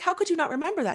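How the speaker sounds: put-on frustrated little kid. Retelling how a brother as a child got frustrated with their mom: imitating brother's frustration. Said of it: "got frustrated with my".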